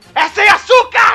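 put-on shout. Retelling what a man yelled at her after sipping his drink, retelling a big shout. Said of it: "ele deu um belo grito assim".

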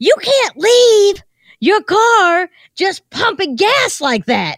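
angry, furious, high, drawn-out scolding yell. Retell how a woman confronted you walking into the gas station, imitating a woman's furious yell. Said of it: "this woman yelled at me like she's going to kill me".

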